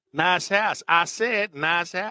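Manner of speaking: Chicago voice with a strange Southern lean. Retelling a man whose Alaskan accent sounded oddly Southern, in his odd Southern-tinged accent. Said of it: "his Chicago accent had a very, very odd Southern quality to it".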